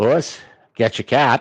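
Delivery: put-on Maine accent. Retelling a story, quoting the old man to the city doctor: Maine accent. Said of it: "immersive Maine accent".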